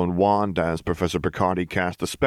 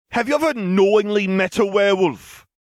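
very high, loud, scornful scoffing; 14 semitones higher, 5 dB louder than usual. Narrator reads a one-handed man questioning a professor, scoffing. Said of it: "he scoffed".

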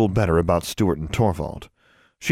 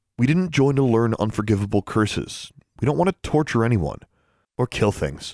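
ordinary delivery

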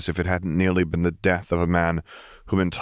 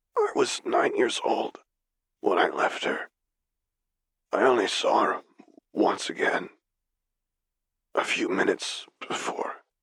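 weak rasping voice, slower; 3 dB quieter than usual. Narrator reading Vader's reply to Piet, in Vader's frail rasp. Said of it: "The voice, a frail rasp, the ruin of the pleasant tenor in the recording the Solo twins had shown him, labored to be heard at all".

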